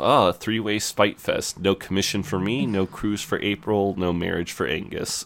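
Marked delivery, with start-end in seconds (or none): none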